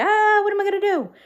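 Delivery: high, loud, fast, frantic, anxious wail. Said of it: "of being overwhelmed, anxious".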